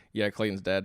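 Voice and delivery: quiet, low muttered aside under the breath. Retelling a remark heard on a recording: imitating Evan muttering under his breath. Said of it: "under his breath".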